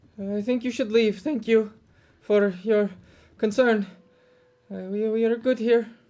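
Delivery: frightened, faltering speech. In a roleplay scene, a character turns away strangers offering help, scared. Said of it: "You sound scared".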